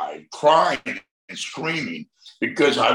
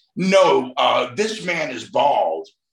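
ordinary talk, nothing marked

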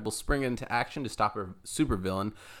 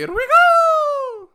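shrill, booming Italian cartoon voice, very high, drawn-out go; 13 dB louder than usual. Asked by his buddy for his best Mario, trying again; Mario impression. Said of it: "How's that?".

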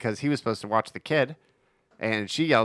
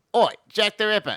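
hammy, high-pitched, bad British police officer accent; 10 semitones higher, 4 dB louder than usual. Retelling a movie character's lines as a fake British cop: imitating bad British cop acting. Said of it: "the worst British Bobby acting of all time".

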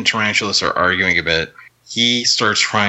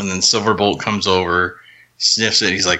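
ordinary talk

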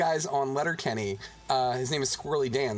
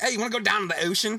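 put-on silly, dumb-sounding Baltimore accent, pitched up; 7 semitones higher, 3 dB louder than usual. Acting out how those people ask you to the ocean, in a put-on stupid-sounding accent. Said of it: "they say it with that stupid fucking accent".

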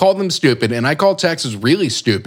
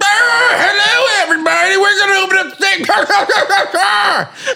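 put-on old prospector voice, higher pitched. Mocking the governor announcing the state reopening: Greg Abbott as an old prospector. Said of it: "He's an old prospector".

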